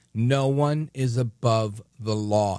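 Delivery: very slow, official-sounding, authoritative delivery. Saying a stock phrase for dramatic effect: slow, authoritative. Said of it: "you have to say it all slow like that, all authoritative".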